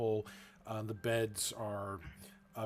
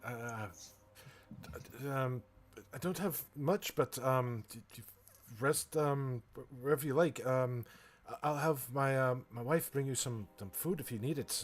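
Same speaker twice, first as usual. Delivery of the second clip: anxious, stuttering character voice, higher; 3 semitones higher than usual. Voicing a host greeting important guests: nervous stammering NPC. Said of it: "and he's real nervous".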